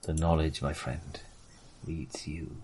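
low, hushed, menacing, foreboding delivery. A storyteller voicing a character addressing a listener as friend, ominous. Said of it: "He says ominously".

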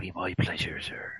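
low, soft Somerset accent fading to a whisper.

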